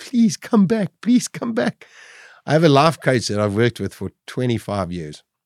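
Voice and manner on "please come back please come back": very high, tearful, pleading, begging voice. Recalling the one time the speaker cried, reenacting a crying plea. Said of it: "1 time I cried".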